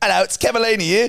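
put-on British accent. Retelling another caller's disguised phone greeting: imitating a put-on British accent. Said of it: "maybe we can fool them with a British".

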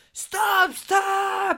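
very high, piercing, drawn-out acted screaming yell. Retelling a woman running out of a shop toward the speaker, retelling her screaming. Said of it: "une dame qui sort en hurlant, qui crie en mode".

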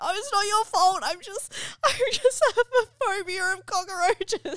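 acted hard crying. Retelling comforting a driver after a cockroach scare, speaking while bawling. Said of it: "I'm like literally bawling my eyes out".

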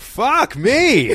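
sudden, very high, loud swearing outburst. Retelling a scene where a character gets bitten: imitating Matt Berry swearing. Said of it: "he gets bitten and he just goes like".

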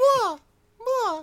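moi cried at very high pitch. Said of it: "No, no, it wasn't mew".

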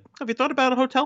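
very high, nonchalant, casual offhand tone. Retelling a scene where a character suggests a hotel: nonchalant Connor impression. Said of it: "so nonchalantly is like".

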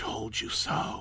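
tiny whisper, barely recognisable. Narrator recounts the daughter speaking beside a corpse, in a small voice. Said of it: "in a small voice I could only just recognize".

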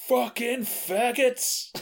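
very high, shrill, loud shout. Quoting a movie line the Nazi character shouts: Frederick Forrest shouting. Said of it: "shouts out".

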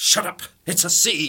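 loud angry snap. Retelling an actor snapping at an extra on set: imitating McGoohan snapping. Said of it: "McGowan snapped at him and went".

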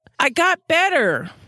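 very high-pitched, touchy, defensive voice. Reading a story aloud, a character insists he got better, defensively. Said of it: "Galaglass said defensively".

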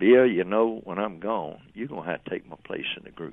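normal talking voice

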